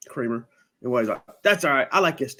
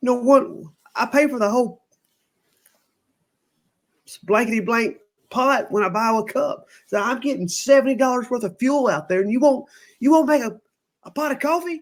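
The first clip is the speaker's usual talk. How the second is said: high, pitched-up, fed-up, aggravated complaining tone; 11 semitones higher, 4 dB louder than usual. Retelling a coffee dispute at a store, the speaker quotes Wade: mock-aggravated, imitating Wade. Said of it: "Wade's starting to get aggravated".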